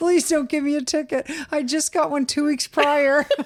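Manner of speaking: play-acted crying in a high, tearful voice. Retelling what you said to the officer who pulled you over, retelling tearful pleading. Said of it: "So I'm crying and I say to the officer".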